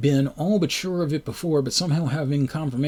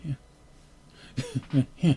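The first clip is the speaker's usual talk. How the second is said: faint, very light, barely voiced murmur. Imitating a woman who only ever said 'help you', very light voice. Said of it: "she always talked in a very light voice ... like that, just just barely".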